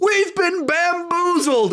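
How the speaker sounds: put-on shrill, very high, excited yell. Recounting a guy in his movie theater shouting at the screen; retelling a yell. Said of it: "A guy yelled that".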